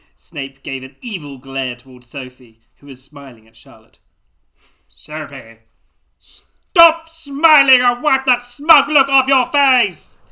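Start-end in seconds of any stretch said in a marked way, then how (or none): 6.2-10.1 all-caps yell, very loud and high-pitched. Reading aloud a story line printed in capital letters, shouted. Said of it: "there was capital letters there. I had to shout it".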